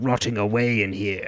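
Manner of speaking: put-on switching into a British accent. Recapping a story's ending, quoting a man switching to his british accent. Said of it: "He then switches to his British accent".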